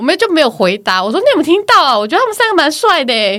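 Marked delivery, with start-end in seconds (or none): 1.2-3.4 deliberately loud, pitched-up voice projected to carry. Retelling a remark to a sister about three doctors: imitating herself saying it loudly. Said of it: "很大声，就现在这么大声".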